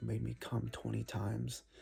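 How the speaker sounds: whispered speech. Retelling what a woman said in his ear: imitating someone whispering. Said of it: "she whispers in my ear".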